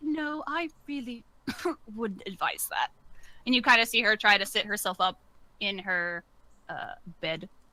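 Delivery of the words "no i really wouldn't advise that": feeble, frail, weak, soft, high queen voice. Narrating a scene to players, voicing the queen speaking out, weak queen's voice. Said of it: "the queen's voice speak out weakly".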